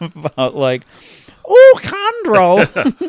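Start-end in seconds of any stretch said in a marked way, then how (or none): 1.5-3.1 very high, loud, sing-song Cockney accent. Trying out how an English speaker would say a name, in a My Fair Lady Cockney accent. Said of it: "some My Fair Lady Cockney".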